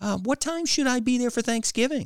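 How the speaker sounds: sunny, bright, very high-pitched voice. A narrator voices a daughter asking her sarcastic parent about Thanksgiving, brightly. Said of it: "she asked brightly".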